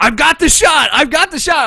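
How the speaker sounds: shrill, very loud, high urgent shout. Recounting how Kenny yelled at the speaker during the shooting, retelling Kenny's yell. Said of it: "Kenny is yelling at me like".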